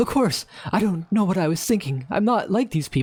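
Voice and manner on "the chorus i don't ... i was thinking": high, rising voice climbing to almost a yell. Character answering a question, his voice rising to a near yell. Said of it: "his voice rises to a near yell".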